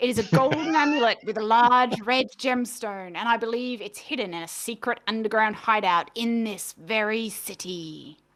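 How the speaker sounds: slow, drawn-out put-on buccaneer pirate accent. Voicing a woman meeting the party in an alley: put-on pirate accent. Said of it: "Apparently she's a pirate now".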